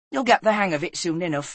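ordinary delivery, nothing marked

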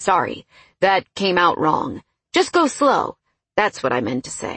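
ordinary delivery

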